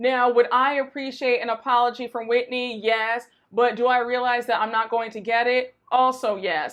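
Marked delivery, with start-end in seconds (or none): none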